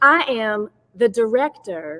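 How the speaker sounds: put-on American Southern accent. Saying a job title after being asked for an accent: Southern accent. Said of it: "I can do it with a Southern accent".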